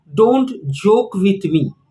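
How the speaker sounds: plain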